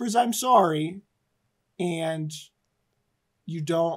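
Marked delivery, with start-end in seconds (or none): 0.1-1.0 half-whispered, hushed voice. Narrating a character who lets go of the player's character, half-whispering. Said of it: "She whispers".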